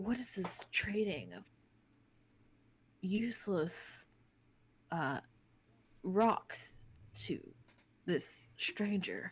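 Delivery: hushed, close, secretive whisper. Voicing Gam, who stares at a stranger and whispers to Brennick, whispering. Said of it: "and he whispers to you".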